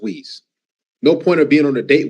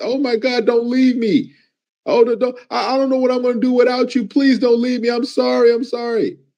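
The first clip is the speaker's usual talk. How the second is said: high, fake tearful pleading with put-on sobbing; 10 semitones higher than usual. Mocking how a woman acts when she's caught, mock tearful pleading. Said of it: "she's trying to act like".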